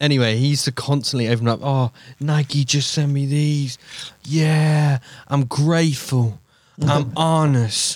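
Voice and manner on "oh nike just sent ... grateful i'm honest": very slow, drawn-out boasting, every word stretched. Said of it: "when I'm trying to do an impression of [name]".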